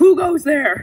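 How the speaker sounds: bold, high, loud shouted yell. Retelling how Grandma came out to check: imitating Grandma yelling. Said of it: "she's just yelling, like".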